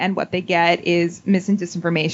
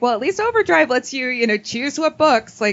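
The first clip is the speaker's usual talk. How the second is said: play-acted, very heavy, sing-song dripping sarcasm; 7 semitones higher than usual. Retelling an audience member's remark about Overdrive: imitating Laura Crossett sarcastically. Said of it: "very sarcastically".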